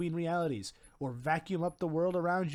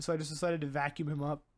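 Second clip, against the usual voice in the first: ordinary talk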